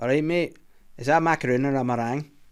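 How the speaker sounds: put-on man's Glaswegian Scottish accent. Telling a joke, the speaker voices a Glaswegian man in a bakery: Glaswegian Scottish accent. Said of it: "macaroons in a Scottish accent".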